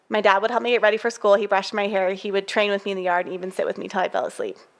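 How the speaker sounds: ordinary talk, nothing marked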